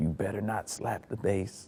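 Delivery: very quiet, slow, hushed whisper. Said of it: "lean over and whisper in my ear".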